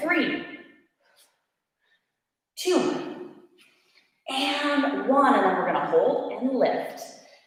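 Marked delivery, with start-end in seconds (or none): 0.0-5.3 trembling, shaking, strained, slow voice. Leading an exercise hold and counting down the last reps: shaking voice. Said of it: "my voice is shaking".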